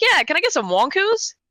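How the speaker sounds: acted high-pitched teenager voice.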